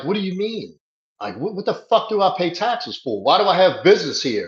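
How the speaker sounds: mock outraged, indignant ranting. Retelling a truck owner's reaction, imitating a furious man. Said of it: "the guy's furious. He's like".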